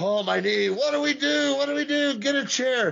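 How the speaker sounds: yelling, voice pushed very high and shrill. Retelling a match where Brock Lesnar yells about his knee: imitating Brock Lesnar yelling. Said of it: "he's yelling at Heyman".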